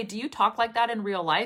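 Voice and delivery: ordinary talk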